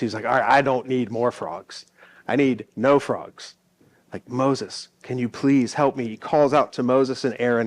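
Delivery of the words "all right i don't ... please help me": desperate pleading, begging voice. Retelling how Pharaoh begs Moses to take the frogs away: imitating Pharaoh pleading. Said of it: "he goes and he pleads with Moses".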